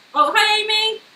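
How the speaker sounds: shrill, very high, very loud shout. Speaker greets amy while doing a puzzle, shouting. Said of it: "Why am I shouting?".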